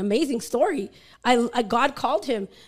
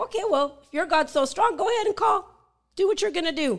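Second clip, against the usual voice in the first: high, mock sarcastic goading taunt; 6 semitones higher than usual. Retelling a showdown over whose god was stronger, retelling a sarcastic taunt. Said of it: "he was sarcastic along with it".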